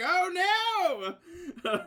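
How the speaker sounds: play-acted, very high, loud crying wail, long oh. Voicing a villain whose phone was just crushed: acted dismay. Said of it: "He's like".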